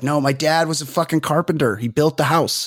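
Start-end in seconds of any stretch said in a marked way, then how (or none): none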